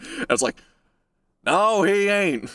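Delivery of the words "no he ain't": put-on cranky old Texan voice, higher pitched. Retelling own reply about a man's accent: Cotton Hill voice. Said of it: "I was like Cotton Hill".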